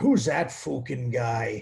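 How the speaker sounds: put-on strong Irish accent, spoken slowly. Imitating Conor McGregor while discussing the Irish accent: Conor McGregor voice. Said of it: "Conor McGregor".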